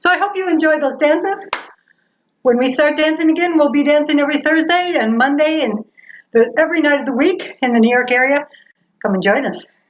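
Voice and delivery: out of breath. Just after dancing the Virginia Reel, inviting viewers to join, out of breath. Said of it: "I'm out of breath".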